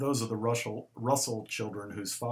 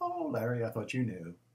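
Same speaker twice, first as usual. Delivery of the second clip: play-acted offhand, breezy, casual no-big-deal tone. Retelling her reply to a shocked "What?": imitating a no-big-deal voice. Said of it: ""Oh, it's a no big deal" sort of voice".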